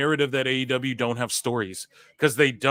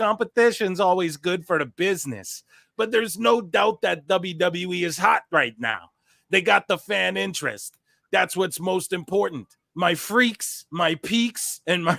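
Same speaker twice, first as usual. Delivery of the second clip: put-on Minnesotan accent, higher pitch; 5 semitones higher than usual. Reading out a wrestler's quote about competition: Scott Steiner in Minnesotan accent. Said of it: "A Minnesotan accent".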